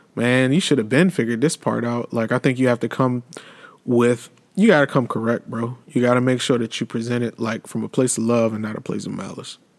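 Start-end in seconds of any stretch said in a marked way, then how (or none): none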